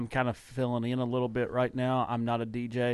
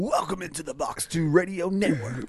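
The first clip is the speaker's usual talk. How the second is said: put-on rich radio DJ voice, loud and high; 6 semitones higher, 5 dB louder than usual. Saying they lack a DJ's voice, then showing it: rich radio DJ voice. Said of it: "DJs are supposed to have that rich".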